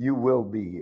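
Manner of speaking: put-on firm, stern, military-style commanding tone. Recalling how military commands were given, imitating a commanding order. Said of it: "They used to give commands like this".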